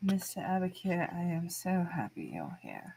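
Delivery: put-on slow, swooping British accent slipping back through. Voicing a character greeting an old friend: old british accent. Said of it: "her old British accent is coming back into her voice".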